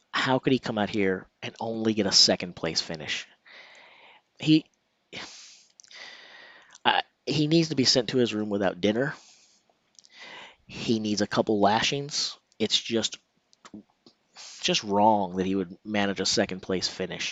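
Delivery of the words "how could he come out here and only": plain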